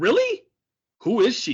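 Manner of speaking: voice dripping with disgust, high and swooping. Retelling a character's reply to news of a wedding: imitating a disgusted tone. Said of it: "the disgust in her voice".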